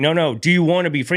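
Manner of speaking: put-on pressing insistence. Retelling a facilitator repeatedly asking a question: imitating someone getting louder. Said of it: "he just kept getting louder and louder".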